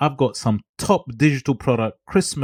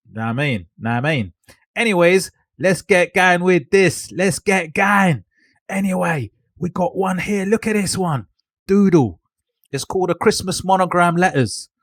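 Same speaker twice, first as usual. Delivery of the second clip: higher-pitched put-on East London Cockney accent; 7 semitones higher than usual. Speaker addresses viewers and introduces the next one, in a put-on Cockney accent. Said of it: "let me just go back to my normal voice".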